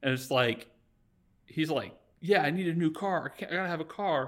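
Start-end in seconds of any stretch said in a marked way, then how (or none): 2.2-4.3 put-on pushy, insistent, assertive, aggressive tone. Retelling a character demanding a new car at the front office: imitating an assertive, aggressive demand. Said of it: "being assertive, and he's, like, aggressive".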